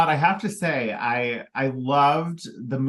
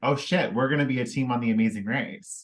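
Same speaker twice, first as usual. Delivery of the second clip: ordinary talk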